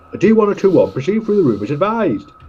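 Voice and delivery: high, loud, acted calling out. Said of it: "best acting".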